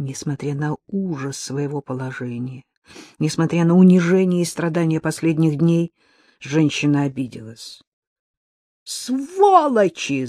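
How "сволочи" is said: piercing, very high yell with fresh force. An offended woman, held prisoner, yells with renewed force. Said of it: "заорала она с новой силой".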